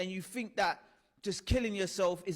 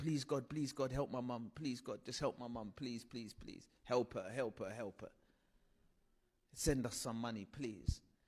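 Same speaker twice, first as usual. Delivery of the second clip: low, tearful, crying, begging and pleading voice; 8 semitones lower, 9 dB quieter than usual. Speaker retells praying for help for their mum, retelling a tearful prayer. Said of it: "So I'm crying and I start praying".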